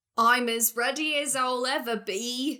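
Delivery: put-on effortful, struggling, forced Cockney accent, barely managed. In a role-played scene, [name] answers when asked if ready; [name]'s struggling Cockney accent. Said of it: "You asked for Cockney".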